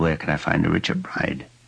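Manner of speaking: plain reading voice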